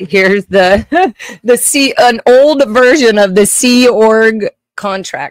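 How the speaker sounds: booming, very loud, drawn-out yell. Speaker shows viewers an old Sea Org contract, yelling into the mic. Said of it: "just yelling in the mic".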